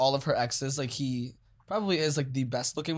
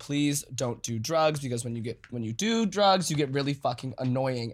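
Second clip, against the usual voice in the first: mock-irritated, annoyed pleading tone. Reminding the listener what they said at Coachella, mock-irritated. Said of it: "you were getting irritated".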